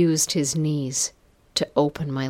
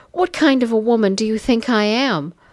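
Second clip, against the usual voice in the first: hoarse, raised pleading voice, full of emotion; 7 semitones higher, 5 dB louder than usual. A woman pushed against a banister answers the man, pleading hoarsely. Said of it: "I pleaded hoarsely, my voice laden with emotion".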